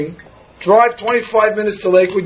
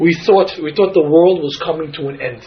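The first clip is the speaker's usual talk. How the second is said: plain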